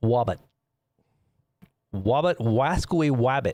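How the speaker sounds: cartoon lisping voice. Riffing on cartoon characters while talking to viewers: Elmer Fudd voice. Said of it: "Elmer Fudd".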